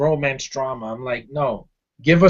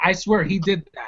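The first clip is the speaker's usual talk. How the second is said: ordinary talk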